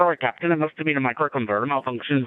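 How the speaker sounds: terrible fake Scottish accent, loud and high. Acting out a line addressed to the captain; bad scottish accent. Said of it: "my Scottish accent's terrible".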